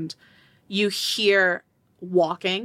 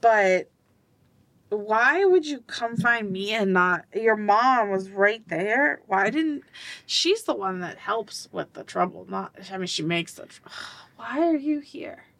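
put-on slightly drunk, tipsy speech; 3 semitones higher than usual. Voicing a father asking why his child came to him: a little drunk. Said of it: "I'm a little drunk".

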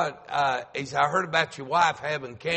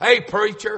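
mock-angry voice, higher and louder; 7 semitones higher, 7 dB louder than usual. A pastor retells a man's Monday morning phone call, imitating a mad caller. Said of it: "he sounded like he was mad".

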